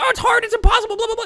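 shrill, very high screaming shriek. Mocking someone who pushes back on advice to move: imitating someone screaming.

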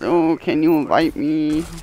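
put-on high, slow voice of a five-year-old kid. A gamer imitates a young kid on their team: impression of a little kid. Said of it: "That's a good impression".

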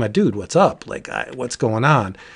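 ordinary delivery

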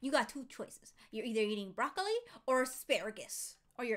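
sassy, firm parent voice. Mocking a co-host who gave the viewers two options, imitating a sassy parent. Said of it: "You sounded like such a sassy parent".

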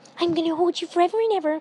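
very high, loud, delighted, happy gush. Reading a story aloud, voicing a character hugging another: happy. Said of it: "Fluttershy says happily".

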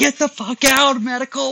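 put-on screaming. Doctor retelling screaming at a man he kicked out, retelling a scream. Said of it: "And I'm screaming at him".

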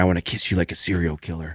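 hushed stage whisper, close in. Retelling leaning in to someone's ear while wearing headphones: retelling a half-whisper. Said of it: "I whisper in her ear".

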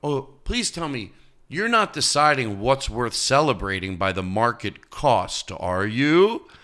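put-on sarcastic tone. Repeating the line he tells the audience about lobster, acting out a sarcastic question. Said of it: "I always say it sarcastically to the audience".

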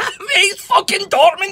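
furious outburst. A football fan rants about his team's run to the final: raging. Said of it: "You're raging!".

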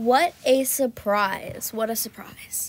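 slow, sarcastic drawl with feigned surprise. Streamer right after falling off a horse in a game; sarcastic. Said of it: "I was being sarcastic".

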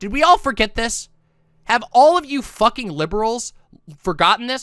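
angry. Addressing the listeners as liberals, getting too angry too early. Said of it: "I'm getting too angry too early".

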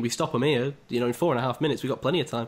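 ordinary delivery

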